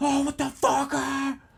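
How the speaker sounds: shrill, high, stretched-out yell. Describing a past fear of yelling at people, acting out yelling. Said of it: "I'd be like yelling at people".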